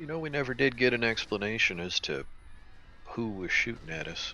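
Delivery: quiet, hushed, low-key delivery. A character edges closer to Cap and speaks in a quiet voice. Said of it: "in a quiet voice".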